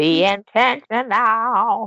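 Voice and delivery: slow, drawn-out put-on impression voice. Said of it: "That was my [name] impression".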